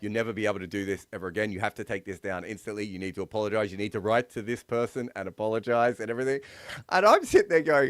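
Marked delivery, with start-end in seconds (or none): none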